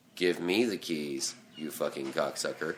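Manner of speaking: very low, quiet, mocking sarcastic read. Speaker demonstrates how an audition line should have been delivered: sarcastic. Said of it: "give it more sarcastic".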